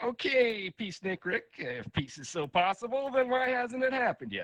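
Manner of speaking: very high, needling, sarcastic, mocking voice. Speaking to an audience about world peace, voicing a mock-sarcastic inner voice. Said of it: "sarcastic voice in my head".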